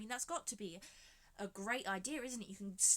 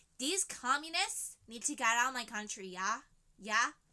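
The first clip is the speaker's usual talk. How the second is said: attempted American accent; 2 semitones higher, 7 dB louder than usual. Acting out americans of the time complaining about immigrants: imitating an american accent. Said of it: "That's what the Americans were like".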